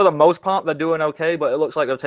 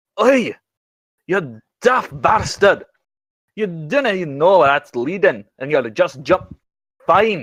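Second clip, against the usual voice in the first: fed-up, cross outburst after a sigh; 3 semitones higher than usual. Narrating a game scene where a character reacts to another jumping in, angry shouting. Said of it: "disgruntled sigh and anger shouting".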